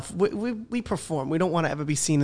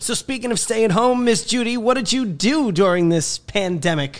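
loud, pitched-up put-on radio announcer voice; 7 semitones higher, 6 dB louder than usual. Leading into a question for a guest, in a radio announcer voice. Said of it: "It's my radio announcer voice".

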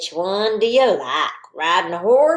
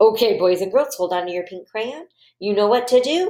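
plain

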